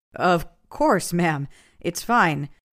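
plain reading voice

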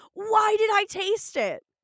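put-on high, loud, shrieking, grossed-out scream. Retelling how a character reacts after tasting something: imitating a disgusted scream. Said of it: "instantly starts screaming in disgust".

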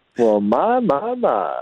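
very smooth, very slow, charming delivery. Acting out a smooth greeting to a lady: smooth Lando Calrissian voice. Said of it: "just real smooth, like how he was talking to Princess Leia".

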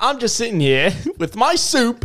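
put-on Aussie-style Australian accent. Taking a turn when the group says to do Australian, in an Australian accent. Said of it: "we'll do Australian".

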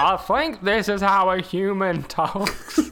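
very slow, deliberate alien voice. Joking that Billy Ray sounds like an alien, imitating an alien in a human body. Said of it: "an alien, like, has taken over".

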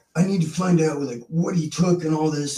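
heated, mild yelling tone. Retelling a phone call from a manager: imitating someone yelling. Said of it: "he's yelling at me on the phone".

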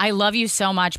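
plain

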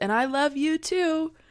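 sarcastic, very high, loud shout.

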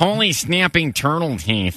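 very slow, drawn-way-out Midwestern accent. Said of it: "do Midwest".

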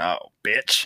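put-on muttering under the breath. Retelling what one of the drag queens said to Winifred: imitating a mutter under the breath. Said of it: "A hundred and ten percent under their breath".

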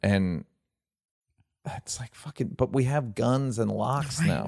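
fed-up, frustrated, exasperated outburst. Venting after watching a documentary, frustrated. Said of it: "Why do you sound so frustrated?".

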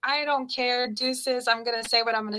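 ordinary talk, nothing marked

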